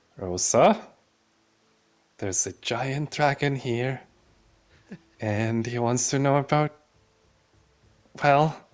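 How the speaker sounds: side remark spoken aside, meant for one ear. Speaking in character beside a dragon: under the breath. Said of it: "just under my breath".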